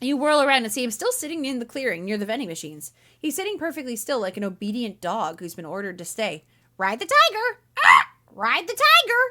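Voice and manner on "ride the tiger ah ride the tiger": very high, slow, sing-song parrot voice. Streamer narrating a second-person story aloud, voicing a parrot: parrot voice. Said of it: "It's a good parrot voice".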